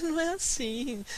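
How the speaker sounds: put-on high little voice with laughter through it. Retelling how a woman corrected her, imitating a little laughing voice. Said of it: "aquela vozinha assim, né, rindo".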